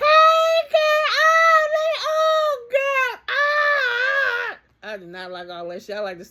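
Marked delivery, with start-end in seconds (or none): 0.0-4.9 put-on very high, very slow, loud drawn-out excited hollering. Imitating women greeting each other: imitating women yelling greetings. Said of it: "they always start all this goddamn yelling".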